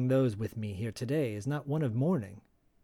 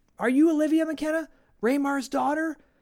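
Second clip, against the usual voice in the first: put-on yell, higher and louder; 14 semitones higher, 6 dB louder than usual. Retelling how reporters yelled at a woman arriving: imitating reporters yelling. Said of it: "they're yelling at her".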